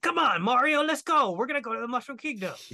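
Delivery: very high, fast little voice with slight rasp. Discussing an actor's take on Toad, imitating Toad's voice. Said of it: "he added a little rasp to it".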